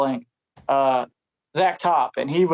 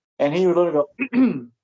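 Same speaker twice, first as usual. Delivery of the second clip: plain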